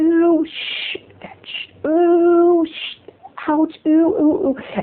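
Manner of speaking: very high, very slow, strung-out ew. Retelling own reaction in the van: imitating own half-whispered ew. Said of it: "but I had to whisper".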